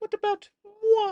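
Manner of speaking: soft, flirtatious put-on character voice. Showing off one of the Frank Oz voices: soft, flirtatious Miss Piggy voice. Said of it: "the softer, more flirtatious piggy".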